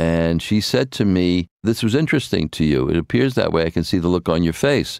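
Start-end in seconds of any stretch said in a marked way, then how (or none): none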